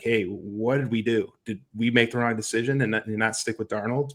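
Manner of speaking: ordinary delivery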